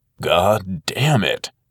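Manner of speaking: slow, drawn-out, heartfelt, full of feeling. Narrator reading a character's line after he is knocked into trash bags, slow, with feeling. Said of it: "Will said slowly and with feeling".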